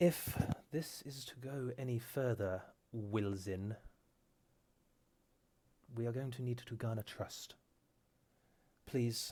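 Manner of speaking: worn-down, weary, tired delivery. Voicing Gary Ellie, who sighs and asks for trust: weary Gary Ellie voice. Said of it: "kind of with a weary tone of voice".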